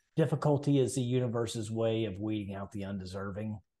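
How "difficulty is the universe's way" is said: ordinary delivery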